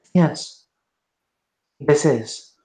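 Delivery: very calm, even, completely unruffled tone. Voicing a woman answering at a door before she kicks it in, very calm. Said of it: "She will say very calmly".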